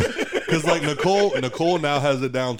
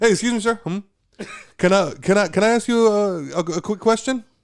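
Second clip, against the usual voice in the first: pushy salesperson voice, pitched up; 7 semitones higher than usual. Acting out a stranger stopping a shopper: acting out a salesperson stopping someone. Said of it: "they stop you as you're, like, pushing your basket".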